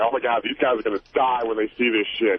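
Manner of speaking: ordinary talk, nothing marked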